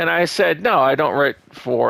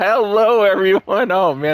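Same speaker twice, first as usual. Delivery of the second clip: giggling while speaking, pitched higher; 6 semitones higher, 4 dB louder than usual. Greeting everyone at the start, giggling while talking. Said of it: "I'm giggling already".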